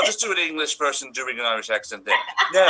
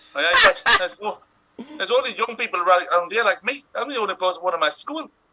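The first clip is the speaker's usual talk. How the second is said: put-on north-east English Geordie accent; 4 semitones higher than usual. Asked to continue the scene, in a geordie accent. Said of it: "with a Geordie accent".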